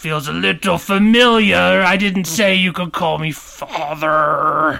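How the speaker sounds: acted loud demonic voice. Krampus answers someone who called him Father, loud Krampus voice. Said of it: "Krampus keeps spiking the levels".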